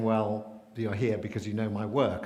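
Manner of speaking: ordinary talk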